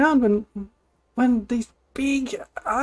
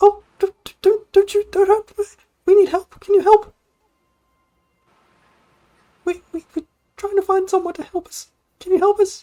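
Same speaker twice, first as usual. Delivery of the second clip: the tiniest voice, a high, loud squeak; 7 semitones higher, 6 dB louder than usual. Voicing a tiny creature speaking from a rock, the tiniest little voice. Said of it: "the tiniest little voice, way higher in pitch".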